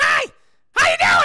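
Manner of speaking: very high, loud screaming voice with a growl. Telling chat how they always picture Toad sounding: screaming high Toad voice. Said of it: "It's high-pitched. Kind of got, like, a growl to it".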